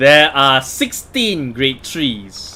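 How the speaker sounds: very slow, deliberate speech.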